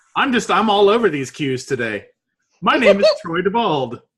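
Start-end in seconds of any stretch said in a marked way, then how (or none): 2.6-4.0 proud, enthusiastic tone, brimming with pride. Introducing oneself by name as a guest: sounding very proud. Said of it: "I sound very proud of that".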